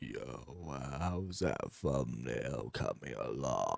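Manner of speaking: hushed, very quiet, slow, drawn-out creepy croaking rasp. Repeating a played voice message with disgust: imitating a weird creepy voice. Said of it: "why are you talking like that".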